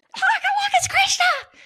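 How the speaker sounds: high, loud, excited screech. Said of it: "and I screeched".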